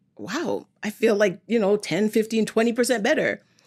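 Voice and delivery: plain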